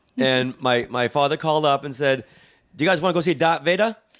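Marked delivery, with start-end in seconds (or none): 2.8-4.0 put-on thick Boston accent, quick and high. Retell your father's phone call asking if you want to see darth vader, in a thick boston accent. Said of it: "He had a thick Boston accent".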